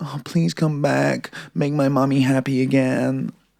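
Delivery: soft put-on American accent. Quoting the letter she wrote, the speaker reads it in a put-on american accent. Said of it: "Good accent as well".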